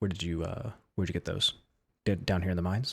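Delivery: very soft, low, faint, trailing voice. A character's voice trails off, then asks where the items came from: very soft voice. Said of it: "and then a very soft".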